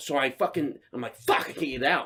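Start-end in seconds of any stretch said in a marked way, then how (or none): none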